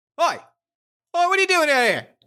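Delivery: indignant, affronted voice, very high and swooping. Voicing a guard who catches a player near the tapestries: indignant guard voice. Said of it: "a tall guard ... marching towards you".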